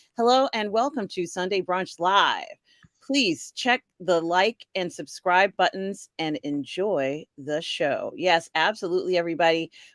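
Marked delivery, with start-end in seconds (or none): none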